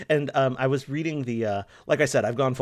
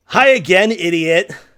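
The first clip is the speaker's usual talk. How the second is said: very loud, high, furious yell; 6 semitones higher, 12 dB louder than usual. Voicing a game character in the suggested voice: angry character voice.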